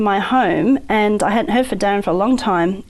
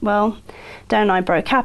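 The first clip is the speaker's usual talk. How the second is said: normal talking voice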